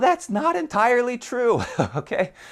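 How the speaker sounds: very high voice, cracking and breaking. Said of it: "As my voice cracks".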